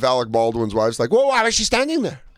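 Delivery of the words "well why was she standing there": very high put-on Spanish accent. Imitating a wife defending her husband: imitating a fake spanish accent. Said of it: "With her fake Spanish accent".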